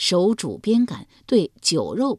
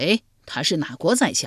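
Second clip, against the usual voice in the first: ordinary delivery, nothing marked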